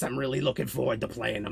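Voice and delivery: put-on chain-smoking Bronx goblin voice. Describing the goblin he will play in a campaign: Sprocket goblin voice. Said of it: "He talks a lot like this".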